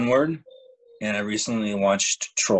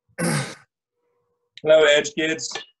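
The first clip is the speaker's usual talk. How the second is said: talking while chewing, higher pitch; 6 semitones higher, 3 dB louder than usual. Greeting the kids at the start, talking with a mouth full of food. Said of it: "he's eating mouthful of food".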